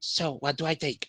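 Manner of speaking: whispered, in a character voice. Playing a character who sneaks close to Rubbish: whispering in character. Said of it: "He's going to whisper to, to, to him".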